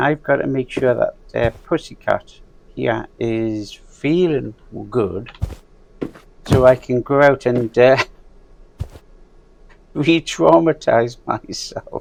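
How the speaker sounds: talking while half laughing through the words. Explaining the next move in the game, laughing while talking. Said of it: "I'm laughing, I know I'm laughing".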